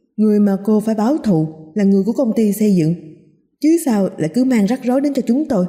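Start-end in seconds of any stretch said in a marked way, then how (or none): none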